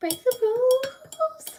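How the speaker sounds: mock rebel cry, high, slow and drawn out.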